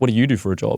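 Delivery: put-on angry, annoyed authoritative voice. Retelling a traffic stop, quoting the cop's question: imitating an angry cop. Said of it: "you could tell he was genuinely pissed off".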